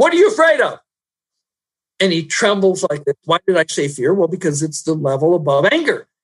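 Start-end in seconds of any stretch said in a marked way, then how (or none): 0.0-0.8 play-acted very high, sharp, loud, high-pitched shout. Retelling confronting a man who had yelled at his wife, retelling a shout. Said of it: "I pointed my finger at him and I shouted".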